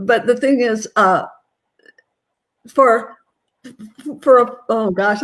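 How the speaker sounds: slow, halting stammer, stumbling over words. Answering a question about discipline for different ages: stuttering and stammering. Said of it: "I'm I'm really stuttering and stammering on this one".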